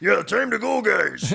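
very high, very loud, rough voice. Imitating how a player sounds on the field: imitating Mahomes's voice. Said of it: "how does your voice do everything at once?".

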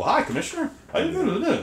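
brisk, lively, very high, swooping, up-tempo sing-song delivery. Show how Kevin Conroy's Bruce differs from his Batman, in an up-tempo Bruce voice. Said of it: "Bruce is a little more up-tempo".

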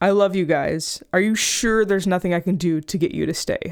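mock quavering, unsteady, shaking, trembling voice. Retelling a coworker pleading for them to stay: imitating a shaking voice. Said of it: "his voice started shaking".

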